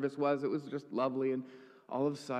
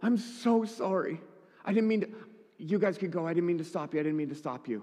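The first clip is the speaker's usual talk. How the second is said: mock words pushed through heavy crying, bawling; 3 semitones higher than usual. Retelling a woman's apology to them, the speaker acts out her speech: imitating someone bawling.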